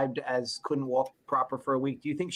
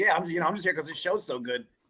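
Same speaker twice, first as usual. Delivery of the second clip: dry, knowing sarcasm throughout; 2 semitones higher than usual. Imitating another speaker's earlier remark: imitating Gary sarcastically. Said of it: "came off, like, sarcastically".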